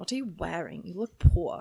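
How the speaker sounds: low, mock slurred speech. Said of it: "this is just me making an accent".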